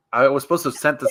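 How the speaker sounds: normal talking voice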